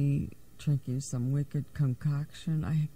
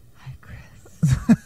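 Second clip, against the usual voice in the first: very loud stage whisper; 9 dB louder than usual. Greeting the other speaker on the air: whispering. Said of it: "Who is that whispering to me?".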